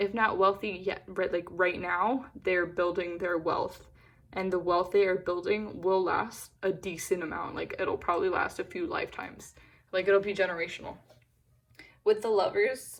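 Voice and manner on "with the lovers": voice cracking and breaking mid-phrase. Speaker giving a card reading to listeners, voice cracking. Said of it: "sorry, my voice just cracked".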